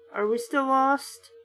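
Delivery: ordinary delivery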